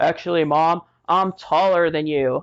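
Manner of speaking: voice dropped low. Retelling a son's reply, imitating his voice with bass in it. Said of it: "he's all with bass in his voice".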